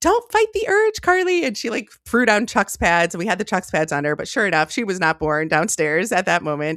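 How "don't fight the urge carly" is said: very high, called-out, high-pitched yell. Retelling the midwife yelling down to the speaker, retelling the midwife's yell. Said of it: "yelled down, she's like".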